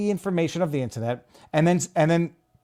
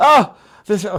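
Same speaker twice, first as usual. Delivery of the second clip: loud, full, outright scream; 3 semitones higher, 7 dB louder than usual. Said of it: "sorry. I'm screaming".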